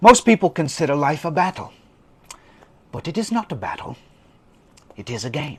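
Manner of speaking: fake, put-on British accent. Reading a self-help book passage aloud: put-on british accent. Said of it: "I recorded this in a British accent".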